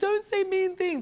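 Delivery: play-acted crying little child, pleading, very high pitch. Retelling childhood teasing by family, imitating own past crying. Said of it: "and I'd be crying".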